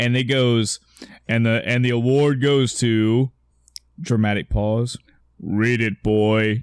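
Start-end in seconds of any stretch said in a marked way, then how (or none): 5.4-6.6 stern video-game warrior voice, like a war god. Retelling an award presentation on stage, imitating Kratos voice. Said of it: "which is just a Kratos voice".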